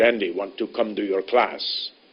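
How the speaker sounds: put-on very heavy, strong West African accent. Retelling what a West African student said at the door: Francis's heavy, strong West African accent. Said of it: "in a very heavy, strong accent".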